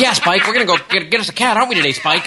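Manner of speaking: fast, high, yappy little cartoon dog voice. Mocking how a man sounds, doing a little cartoon dog voice. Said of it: "he sounds like the little dog that bounced around the bigger dog on the old Warner Brothers cartoons".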